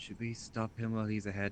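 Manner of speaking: hushed, very quiet half-whisper. In a tabletop game, a player's character speaks aside to a companion, half-whispering. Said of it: "just like whisper".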